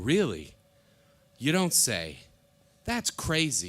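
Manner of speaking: fake chatter, slow, drawn out, with swooping pitch. Retelling a comedian pretending to be on the phone: imitating Rich Voss faking a phone call. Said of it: "pretending to be on the phone".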